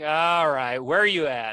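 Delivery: very loud, let-down, jaded, disappointed voice. Retelling a call from jail, imitating Trey's disappointed tone. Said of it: "you just hear his tone change".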